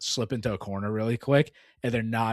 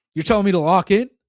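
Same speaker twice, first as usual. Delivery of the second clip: very loud, high-pitched screaming at the top of lungs; 9 semitones higher, 11 dB louder than usual. Retelling a teammate yelling at another player: imitating someone screaming. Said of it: "just screaming at this dude".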